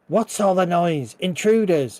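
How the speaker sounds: female goblin voice calling out in alarm. A game master voices a goblin heard after a door opens: yelling feminine goblin voice. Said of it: "a feminine goblin voice, yell".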